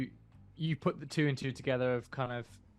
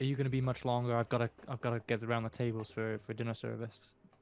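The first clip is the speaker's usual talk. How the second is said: quick, hushed, rushed half-whisper; 2 semitones lower, 3 dB quieter than usual. In the role-play, Joe from Joe's Diner leans in to Stanley's ear, half-whispering. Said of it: "leans in and whispers in your ear".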